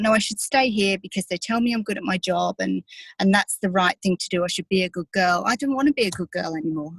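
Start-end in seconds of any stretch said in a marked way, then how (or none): none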